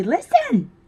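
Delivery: high cartoon-mouse voice. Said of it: "Minnie Mouse has finally gone home".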